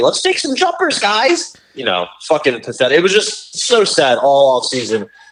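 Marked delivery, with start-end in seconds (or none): 0.0-1.6 much higher, chummy, buddy-buddy voice. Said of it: "he's all buddy-buddy with everybody".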